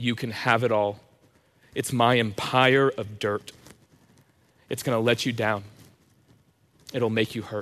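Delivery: ordinary talk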